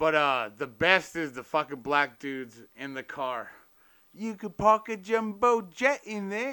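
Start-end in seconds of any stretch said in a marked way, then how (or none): 4.1-6.5 put-on British accent, pitched up. A speaker quoting the guys in the car from a scene, british accent. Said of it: "Is that your British".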